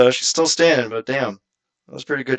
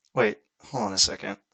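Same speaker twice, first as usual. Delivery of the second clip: ordinary talk, nothing marked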